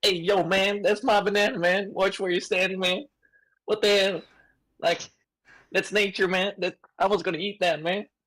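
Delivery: silly put-on monkey voice, high-pitched. Voicing a monkey whose banana was stood on: put-on monkey voice. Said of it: "Is that the voice you're gonna be doing?".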